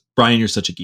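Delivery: ordinary delivery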